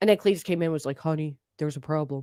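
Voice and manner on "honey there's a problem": mock-dramatic, lower and quieter. Acting out a story for listeners, playing it up: mock-dramatic retelling. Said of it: "like really dramatic".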